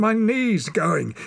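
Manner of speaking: gasping out words. Narrator reads a climber whose hurt knee is giving way, gasping. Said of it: "he gasped".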